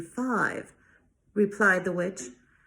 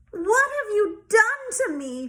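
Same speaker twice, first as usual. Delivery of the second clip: squealing cry, very high; 11 semitones higher than usual. Reading a fairy tale aloud, the narrator voices the princess turned into a warthog, squealing. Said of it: "Squealed the princess".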